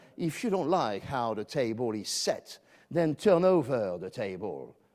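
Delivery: put-on, laid-on American accent. Borrowing a quote from Frank Underwood, said in Frank Underwood American accent. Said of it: "in my best American accent".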